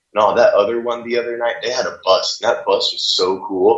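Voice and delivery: ordinary talk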